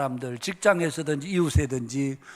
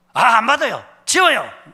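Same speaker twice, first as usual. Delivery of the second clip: very loud, high, furious angry snap; 7 semitones higher, 9 dB louder than usual. Retelling how a young cyclist snapped at a leafleter: imitating an angry outburst. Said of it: "이렇게 화를 내더라는 겁니다".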